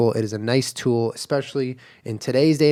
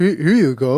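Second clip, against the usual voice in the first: crude, broken caveman way of speaking; 2 semitones higher, 4 dB louder than usual. Showing how they say a catchphrase: talking like a caveman. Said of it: "I talk like a little bit of a caveman".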